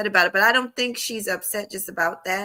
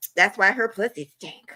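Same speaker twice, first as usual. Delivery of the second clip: ordinary talk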